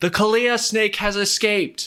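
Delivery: shrill, high, loud bellowing shout. Starting a combat scene, the narrator voices the head researcher yelling up from below, bellowing shout. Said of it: "The head researcher's voice bellows up".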